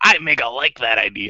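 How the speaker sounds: weird, slow, drawn-out cartoon voice. Describing how Mega Man talked in the old cartoon, in a weird Mega Man cartoon voice. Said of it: "he's got this weird voice".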